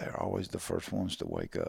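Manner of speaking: soft, hushed, breathy whisper, barely voiced. Retelling an audio cassette of a turkey hunt, imitating someone whispering. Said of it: "and he's whispering".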